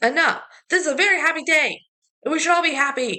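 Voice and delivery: high-pitched, angry yell. Retelling the mom's line from a movie scene: imitating an angry yell. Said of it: "she's yelling that angrily".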